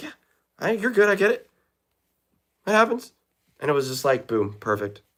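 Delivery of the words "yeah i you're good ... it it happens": very high, easygoing, nonchalant tone. Recounting how a coach reacted to the speaker's mistake, imitating a nonchalant coach. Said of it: "he was just so nonchalant about it".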